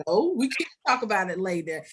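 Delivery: plain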